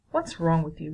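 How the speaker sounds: plain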